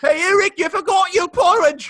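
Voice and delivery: put-on British accent. Imagining how a Brit named the country: imitating a Brit. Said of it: "there's some Brit who's like".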